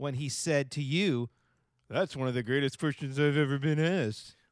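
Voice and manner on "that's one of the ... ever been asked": put-on, mock sarcastic delivery. Quoting a guest's words back to the co-host: put-on sarcastic tone. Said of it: "I used that sarcastic tone".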